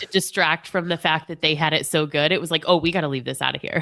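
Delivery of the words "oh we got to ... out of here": mock snobbish, elitist-sounding voice. Imitating the article's writer leaving Gen X out: imitating an elitist tone. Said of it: "Did you hear that in her voice?".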